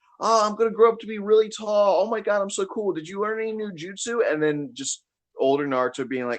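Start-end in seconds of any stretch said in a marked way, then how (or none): 0.2-4.2 put-on very high little kid voice, like a young boy. Retelling a commercial break bit: imitating young Naruto. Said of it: "the original Naruto going like".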